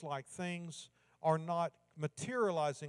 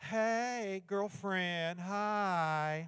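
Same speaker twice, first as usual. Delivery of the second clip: easy, relaxed delivery, "hi" drawn out at end; 3 semitones higher than usual. Passing on a greeting from his daughter Jennifer, in her style: Jennifer imitation. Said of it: "That's my best Jennifer imitation".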